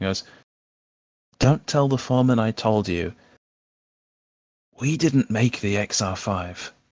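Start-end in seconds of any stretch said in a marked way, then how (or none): 1.4-6.7 secretive, conspiratorial, confiding tone. A character leans in toward the questioners, conspiratorial. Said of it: "Kind of leans in conspiratorially".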